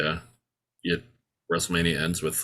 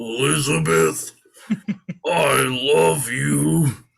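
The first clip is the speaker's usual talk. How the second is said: loud, rough wrestler promo voice; 9 semitones higher, 7 dB louder than usual. Retelling the moment the wrestler grabs the mic, in Macho Man voice. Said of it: "in the most Macho Man voice of all time".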